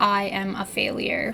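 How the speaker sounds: plain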